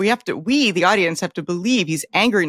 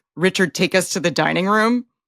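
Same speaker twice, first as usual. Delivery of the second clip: ordinary delivery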